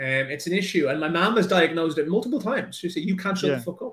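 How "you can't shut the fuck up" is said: put-on Irish-accented voice. Retelling what their mom told them, in their mom's Irish accent. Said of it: "in her Irish accent".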